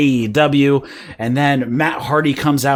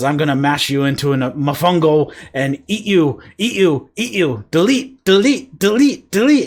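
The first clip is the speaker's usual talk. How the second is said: odd put-on accent with broken speech; 3 semitones higher than usual. Retelling a segment where Matt speaks: broken Matt accent. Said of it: "starts speaking in the broken Matt accent".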